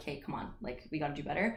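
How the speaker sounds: ordinary talk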